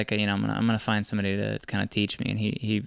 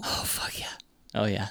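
voice choked with tears, quieter; 6 dB quieter than usual. Admitting the thought of a friend's drowning still goes through the mind, tearing up. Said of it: "I'm kinda tearing up right now".

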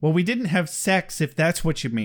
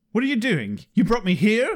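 mock upset, accusing, pitched-up tone; 6 semitones higher than usual. Recapping a scene, the speaker acts out Spike upset. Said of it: "Spike is understandably upset".

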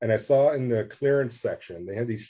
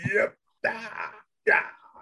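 talking while inhaling, higher; 11 semitones higher than usual. Retelling how they joked around the studio: Charlton Heston impression. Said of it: "we were just doing that around the studio".

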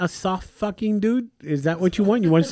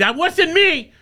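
much higher mock-defensive voice; 11 semitones higher than usual. Retelling how she snaps back after he says something, mock-defensive. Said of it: "she gets real defensive real quick".

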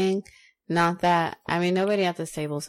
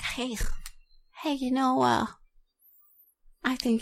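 mock woman's voice impression; 7 semitones higher than usual.

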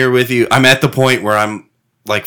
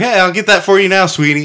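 put-on sweet, kindly, high old-lady voice; 8 semitones higher than usual. Praising the service at a dq, imitating the old lady server. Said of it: "When the old lady's like".

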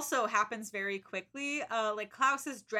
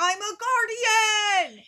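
high, slow, loud, dramatic mock belted shout. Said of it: "And then she's like".

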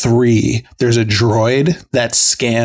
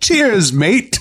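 clumsy, bad put-on British accent, pitched very high; 9 semitones higher than usual. Imitating a character's lines: bad British accent as Ahsoka. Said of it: "she doesn't have a very good British accent".

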